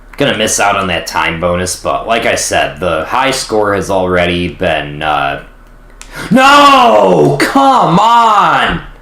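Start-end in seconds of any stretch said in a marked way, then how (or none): 6.3-8.8 high, loud, frustrated yell. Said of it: "I'm already yelling".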